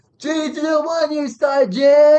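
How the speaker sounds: very slow, loud, flat, gummy, toothless, dopey stupid voice. Retelling how another trainee called out his number: imitating a stupid voice. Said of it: "he would just do a stupid voice".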